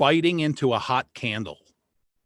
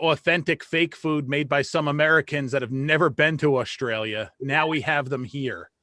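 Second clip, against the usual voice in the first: plain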